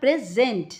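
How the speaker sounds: present with stress on the sent syllable. Teaching the verb present, stress on sent in present. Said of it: "तो ये second syllable के ऊपर ज़्यादा stress है".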